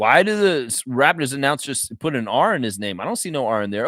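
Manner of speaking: ordinary delivery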